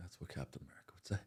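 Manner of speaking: deep, very low, hushed, near-whispered murmur. Retelling what he said from the back seat after looking out the window, real low voice. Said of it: "with real low voice".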